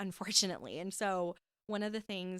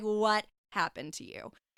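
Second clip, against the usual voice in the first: put-on flat, dead, cold tone, louder; 2 semitones higher, 5 dB louder than usual. Retelling her mom's reply in the argument: imitating mom's dead cold tone. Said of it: "straight face, dead cold".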